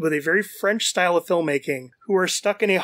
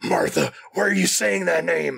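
rough, creaky, grizzled voice. Imagining an older actor as Batman: Lance Henriksen impression. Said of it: "Even Lance Henriksen, like".

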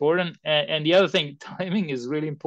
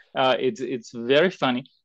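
ordinary talk, nothing marked

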